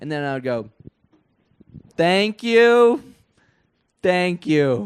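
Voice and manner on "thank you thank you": very loud, very slow, very high booming squeak. Retelling a stand-up set, thanking the crowd in a really high-pitched voice. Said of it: "do that like voice the whole time".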